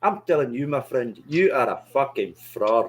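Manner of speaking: put-on Scottish accent held throughout. Repeating the line after being told to go for it: scottish accent. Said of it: "Should we do it in Scottish?".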